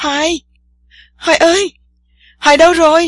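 high, loud alarmed scream. Tiên Sa, unable to see Hoài after he went underwater, screams for him. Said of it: "khiến Tiên Sa la làng".

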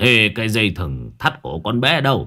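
plain reading voice

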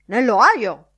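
very loud bellowed shout. The editor answers Ned Lambert's question, shouting. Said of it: "Gridò il direttore".

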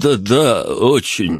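flustered, halting, stumbling over the words. The cook, questioned by Pavel, answers him, flustered and halting. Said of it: "ответил он сбивчиво".

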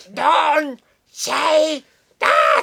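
very high, very loud, shrill, furious little-man voice. Describing a favorite internet meme, quoting the boy in a put-on angry dwarf voice. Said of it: "con una voz de enano cabreado".

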